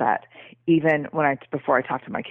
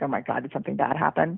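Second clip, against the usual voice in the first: put-on scared, terrified voice; 3 dB quieter than usual. Retelling how Ellen reacts when asked about her day: imitating Ellen terrified. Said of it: "she gets terrified".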